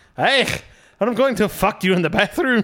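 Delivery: put-on Iranian accent. Retrying the impression after hearing he is Iranian: Doctor Now impression, Iranian accent. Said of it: "so he sounds like this".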